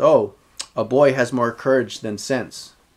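ordinary talk, nothing marked

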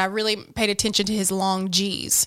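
ordinary talk

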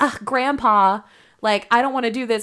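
ordinary delivery

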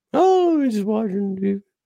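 pitched very high, with no energy at all. Retelling a visit to a grandfather, imitating Grandpa Harry's low-energy voice. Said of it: "this is how he talks".

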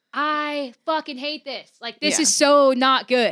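mock yelling. Retelling a frustrated moment while recording a cover, imitating own past yelling. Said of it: "I remember just yelling".

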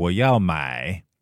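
买 emphasized. Asked for an example of emphasis in Chinese, the speaker gives one, stress on 买. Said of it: "I'm kind of emphasizing the 买".

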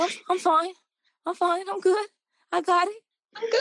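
jittery trembling voice. Retelling a first recording session where the engineer asked if everything was okay: imitating a nervous shaky voice. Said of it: "You sound a little shaky".

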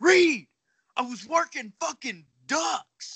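play-acted, very high-pitched, furious yell. Recounting how a man screamed and cussed at him, imitating angry screaming. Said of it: "just starts screaming and cussing at me".

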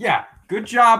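very high, very loud, mocking sarcastic tone. Answering another speaker's dig at the front office: sarcastic. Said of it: "the sarcasm here".

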